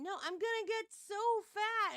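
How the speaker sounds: high, tearful, distraught crying outburst. Retelling a woman's reaction to learning she has twins: imitating someone crying. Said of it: "And she started crying".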